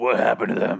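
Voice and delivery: growled delivery. Recapping a show character who growls at some guy, growling. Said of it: "He literally growls like".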